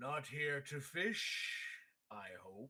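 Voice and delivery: put-on deep, ponderous, slow old turtle voice. Telling a story, the turtle replies, in a deep booming slow turtle voice. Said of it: "The turtle says".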